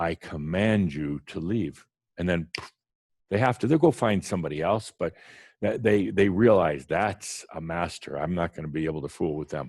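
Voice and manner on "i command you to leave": firm, slow, unwavering authoritative tone. Showing how a real master speaks, firm commanding voice. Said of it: "You don't doubt what you say".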